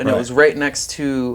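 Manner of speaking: normal talking voice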